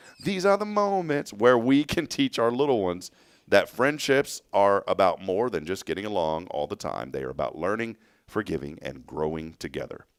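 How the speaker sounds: plain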